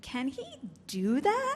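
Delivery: game-show host intonation, like a quiz-show host. Podcast host demonstrating how they ask their recurring question, in game-show intonation. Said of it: "Often in this intonation".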